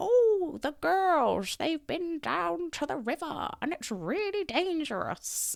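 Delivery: put-on very high, very elderly woman's voice, about ninety-five. Retelling overhearing Missus Shute talk to the speaker's mum, imitating Missus Shute. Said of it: "in my best uh, ninety-five-year-old woman voice".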